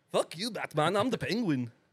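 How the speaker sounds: put-on Scottish accent, pitched high. Taunting Batman as the penguin: put-on Scottish accent. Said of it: "I'm Scottish now".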